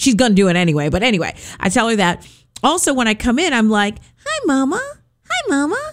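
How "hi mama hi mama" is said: very high, slow put-on voice. Coming in and greeting her, speaking the way she talks. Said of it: "I say it like I'm talking like her".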